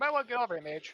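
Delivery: loud, high shout across. Player's character calls back to Mage from around the corner, shouting out. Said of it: "I'll shout him".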